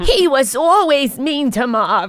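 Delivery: put-on older woman voice, loud and high.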